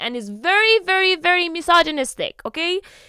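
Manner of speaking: furious yelling, very high and very loud. Speaker ranting to listeners, then admitting to yelling. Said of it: "I am yelling, I'm sorry".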